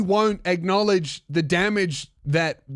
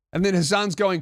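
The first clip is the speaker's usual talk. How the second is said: ordinary delivery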